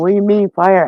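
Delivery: mock alarmed yell, high-pitched. Recounting a house fire, acting out the mother calling from the bathroom: retelling a yell. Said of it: "And she's yelling".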